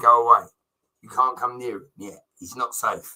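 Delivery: ordinary delivery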